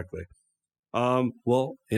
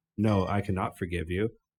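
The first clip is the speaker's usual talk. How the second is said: normal talking voice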